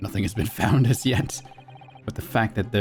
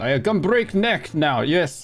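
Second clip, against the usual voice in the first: put-on, fake Russian accent; 6 semitones higher than usual. Friends joking about breaking necks: put-on Russian accent. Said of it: "talk in Russian accent".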